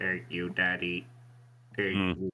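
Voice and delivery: put-on robot voice. Imitating a player's Warforged character named Hubris: Hubris robot voice. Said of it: "his character's voice was".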